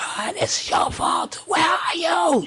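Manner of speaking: mock very high, screechy screaming cry. Retelling a phone call from his wife in labor: imitating his wife screaming. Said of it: "She's screaming".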